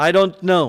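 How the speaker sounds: rude, impolite falling intonation. Answering a caller who asks when someone will be back, rude falling intonation. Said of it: "In falling intonation to create a rude and impolite tone".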